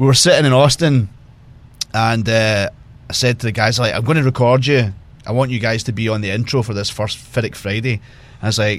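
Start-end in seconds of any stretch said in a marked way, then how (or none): none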